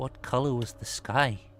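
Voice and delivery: soft-spoken voice. Narrating a game, the speaker voices someone inside questioning Bethlehem: quiet voice. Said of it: "a quiet voice that will say".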